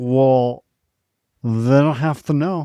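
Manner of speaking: put-on drunk woman voice. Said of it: "and she's trashed".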